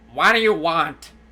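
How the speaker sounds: huge, loud, booming giant sea-creature monster voice. Voicing a huge squid speaking in the players' heads: giant squid voice. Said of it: "it going".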